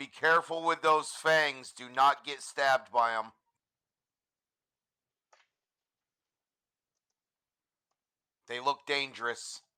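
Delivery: loud yelled call across a distance. Calling out to another character in the game: yelling out. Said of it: "I'm gonna yell out".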